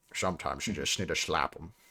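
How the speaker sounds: put-on Scottish accent. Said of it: "But you can still talk in the accent".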